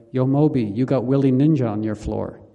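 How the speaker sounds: usual speaking voice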